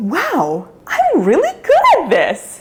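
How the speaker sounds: high, loud, amazed, self-delighted exclamation.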